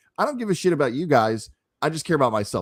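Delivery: ordinary delivery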